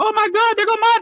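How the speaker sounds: high, fast starstruck gush. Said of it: "I'm like".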